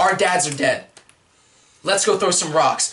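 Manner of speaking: ordinary talk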